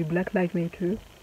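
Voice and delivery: put-on careful English accent.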